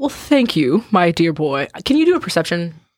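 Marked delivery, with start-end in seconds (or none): 0.0-1.7 bear character voice. Voicing a bear who leans in close to thank a player: voicing the bear. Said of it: "he'll lean into you and go".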